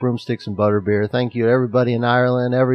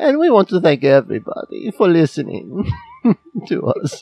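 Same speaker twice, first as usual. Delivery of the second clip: loose, high, swooping put-on German accent; 5 semitones higher than usual. Talking about family heritage, the speaker slips into a put-on german accent. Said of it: "Now I'm kind of going into like a German accent".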